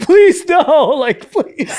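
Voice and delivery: fake tearful, high, drawn-out crying. Retelling begging not to turn the game off: mock crying while pleading.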